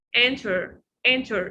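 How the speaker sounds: "enter" said with American accent. Showing a class how to say the word: american pronunciation of enter. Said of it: "we don't stress on it in American accent".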